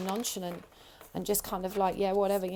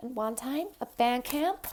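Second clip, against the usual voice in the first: high-pitched twang, much higher pitch; 4 semitones higher than usual. Speaker with a sore throat quotes the film's line, American Pie band-camp girl voice. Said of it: "like that girl off American Pie".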